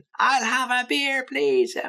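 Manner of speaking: very high-pitched screeching shout. Speaker acting out ordering from a bartender who can't hear, screaming. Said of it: "So you end up screaming or screeching".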